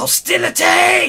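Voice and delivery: very high, loud, creaky, squeezed creepy voice. Game master voicing the Bonarch as the players step forward, creepy Bonarch voice. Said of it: "In a very creepy voice".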